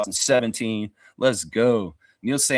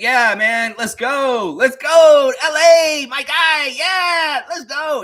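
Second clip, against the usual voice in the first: mock very high, upbeat, eager, drawn-out cheering; 8 dB louder than usual. Acting out how AJ Lawson seemed, happy and upbeat: imitating AJ Lawson's upbeat enthusiasm. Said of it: "very enthusiastic and happy and just kind of like upbeat".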